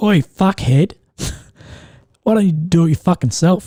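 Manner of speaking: mock-angry voice. Retelling snapping at a man being rude to a flight attendant, retelling an angry retort. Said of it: "and I was pretty fucking pissed".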